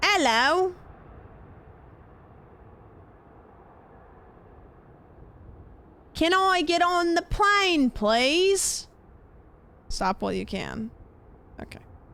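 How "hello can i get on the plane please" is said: put-on high, slow British small-child voice. Asked by someone to do a British accent, doing a British accent. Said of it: "Can you do a British accent".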